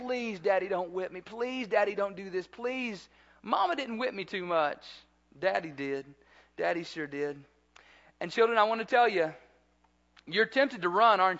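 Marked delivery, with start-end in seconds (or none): 0.0-3.1 mock earnest, soft, repeated begging. Recalling begging his father not to whip him as a child: retelling childhood begging. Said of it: "I begged them".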